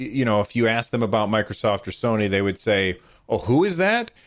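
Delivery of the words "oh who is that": acted facetious, playing dumb, sarcastic, pitched-up. Mocking how the company would answer about Microsoft or Sony, sarcastic Nintendo quote. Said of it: "I'm being a little sarcastic and facetious for effect".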